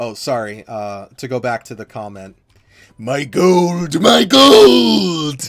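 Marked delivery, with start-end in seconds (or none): 3.0-5.5 very loud, very slow, high put-on cartoon voice. Doing a voice shouting about gold, from DuckTales: imitating a character's voice. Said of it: "I don't know if I did the voice very well".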